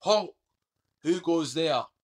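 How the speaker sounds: booming guardsman's parade-ground bellow at full voice. Describing the nightly Tower of London ceremony, a guardsman re-enacts his call: retelling a bellow. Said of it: "I bellow at the top of my voice".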